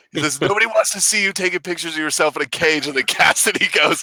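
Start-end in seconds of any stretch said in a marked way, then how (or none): 0.5-2.9 put-on yelling, higher pitch. Retelling a scene where a preacher scolds a girl: imitating someone yelling. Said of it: "Mike yells at her".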